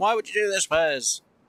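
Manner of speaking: play-acted screaming in a very high pitch. Imagining someone screaming a question at the speaker: imitating someone screaming. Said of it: "someone's just screaming, going".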